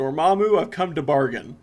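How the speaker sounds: middling, passable put-on American accent. Discussing a movie scene, quoting the hero confronting Dormammu: okay American accent. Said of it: "his kind of okay American accent over and over again".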